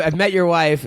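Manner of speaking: ordinary delivery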